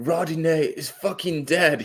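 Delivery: put-on angry yelling voice. Retelling what the coach yelled during extra time: imitating angry yelling. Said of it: "He yelled, he yelled that".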